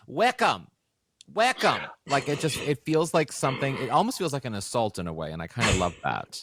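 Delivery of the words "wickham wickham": swooping scream in a Boston accent. Reacting to a guest's last name, imagining someone screaming it in a boston accent. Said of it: "I can hear a Boston accent screaming".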